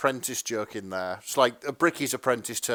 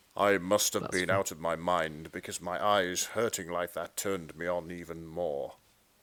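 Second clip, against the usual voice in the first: deep, low, authoritative, commanding narrator voice; 6 semitones lower, 7 dB quieter than usual. Reading a fan fiction summary aloud: Richard Burton narrator voice. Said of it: "the very sort of deep and authoritative narrator voice".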